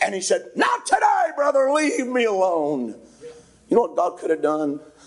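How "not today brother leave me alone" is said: mock angry, slow, swooping delivery. Retelling a man's answer when asked to come: imitating an angry reply. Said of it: "he got angry".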